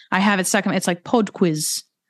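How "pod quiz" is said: amateur put-on British accent. A non-British speaker repeating a phrase stuck in their head: put-on British accent. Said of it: "Is that your best British accent? Yeah, sadly, yes".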